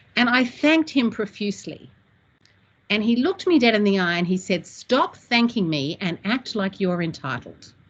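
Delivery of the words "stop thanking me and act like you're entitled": put-on, very stern and firm delivery. Retelling a remark made after being thanked profusely: imitating Tom speaking sternly. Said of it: "He said it very sternly".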